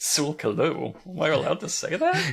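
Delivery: put-on swooping titter of secret thrill. Retelling how Huckleberry said the name: imitating Huckleberry tittering. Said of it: "a little titter in his voice".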